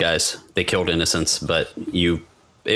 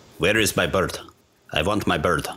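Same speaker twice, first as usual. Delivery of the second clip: put-on Russian villain accent. Listing Russian movie villains, doing a Russian impression. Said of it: "impressions of Russians".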